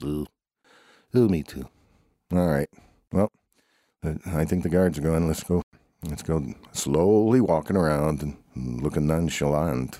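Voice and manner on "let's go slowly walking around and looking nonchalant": slow announcer-style voice. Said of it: "Who was that?".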